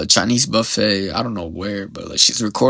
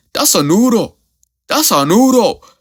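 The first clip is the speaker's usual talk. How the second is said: insistent, defensive, raised and pitched-up tone; 11 semitones higher, 6 dB louder than usual. Retelling a viral video, imitating the buffet manager defending food. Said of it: "be like".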